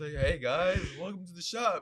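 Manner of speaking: put-on spaced-out, stoned-sounding voice. Retelling entering a CBD shop, the woman there greets them: imitating a stoned woman. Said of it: "She was smacked".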